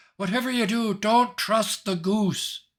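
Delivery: shrill, very high screaming. A player's character comes fluttering up behind the others and screams a warning. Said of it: "I scream out behind you".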